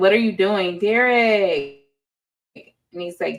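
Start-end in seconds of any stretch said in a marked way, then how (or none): none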